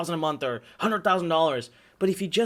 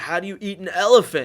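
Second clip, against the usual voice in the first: put-on drunk man's slurred voice, louder; 5 dB louder than usual. Retelling what a drunk man said to him: imitating a drunk man. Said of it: "he's really drunk".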